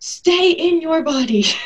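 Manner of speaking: slow, high, firm authoritative tone, odd quality. Retelling what the lead midwife said during a home birth, imitating an authoritative voice. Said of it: "in this like really authoritative voice".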